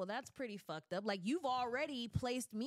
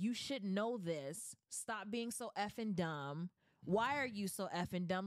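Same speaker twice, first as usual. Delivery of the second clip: mock condescending, talking-down tone; 2 semitones lower than usual. Imitating how the other speaker talks to younger relatives: imitating someone talking down. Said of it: "you say it like".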